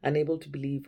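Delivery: ordinary delivery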